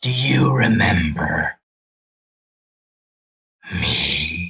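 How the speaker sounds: very slow, low, warped, distorted drawl. Voicing a headless figure that turns and points: voice distorted by flames. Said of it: "voice that is kind of distorted by flames".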